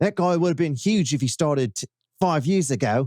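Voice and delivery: bad, awful British accent drifting Australian. Retelling what Paul said about him, attempting a British accent. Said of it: "let me find British".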